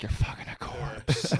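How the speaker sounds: hushed whisper. Acting out a joke said quietly near her: whispering. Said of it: "I just have to whisper".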